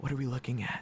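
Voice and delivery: hushed stage half-whisper. Narrating a character stepping between the others and half-whispering to a companion, half-whispering. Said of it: "he whispers to Kosuke".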